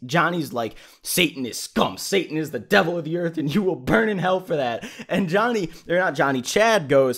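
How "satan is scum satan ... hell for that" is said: furious, pissed-off, condemning rant. Retelling what a furious resident said about Satan: imitating an angry man. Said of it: "And Johnny's pissed".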